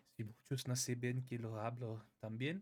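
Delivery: Spanish with French accent showing. Giving an example of speaking Spanish: Spanish with a French accent. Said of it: "there you go".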